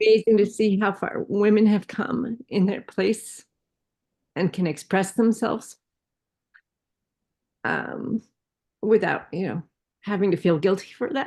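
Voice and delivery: still in tears, teary voice. Thanking someone for posting a video at the end, still in tears. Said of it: "I'm still in tears".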